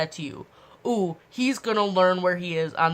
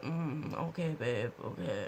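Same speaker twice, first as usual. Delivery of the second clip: slow, mock drowsy, just-woke-up sleepy voice; 5 semitones lower, 12 dB quieter than usual. Retelling a boyfriend answering a morning phone call, imitating a sleepy voice. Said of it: "he has the sexiest sleepy voice".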